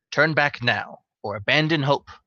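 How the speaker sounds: canny, shrewd female voice. Game master voicing what the players hear through a door, shrewd female voice. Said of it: "a somewhat shrewd female voice saying".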